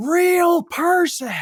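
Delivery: shrill, very high-pitched scream, acted out. Retelling how an angry caller reacted on the phone: imitating a screaming caller. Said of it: "the guy's just screaming".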